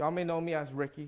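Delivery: ordinary delivery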